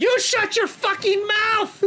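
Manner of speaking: furious, high, loud screaming rage.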